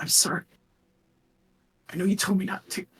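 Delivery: gasping and sobbing. Voicing a mysterious voice that apologizes, then fades: gasping and sobbing. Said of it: "just hear gasping and just kind of sobbing".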